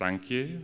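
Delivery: very timid, meek, high little voice. Retelling a student's reply to the teacher: imitating a timid, quiet thank you. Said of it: "very timidly".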